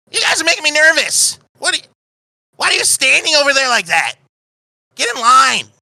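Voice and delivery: loud, very high, annoyed and impatient. Voicing a woman in a line who tells the staring group to get in line: irritated woman. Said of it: "a woman who's just irritatedly looking at you".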